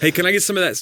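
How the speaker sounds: mock loud, very high outdoor voice. Imitating a brother with no inside voice in a cinema: imitating brother's loud voice. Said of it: "he doesn't have an inside voice".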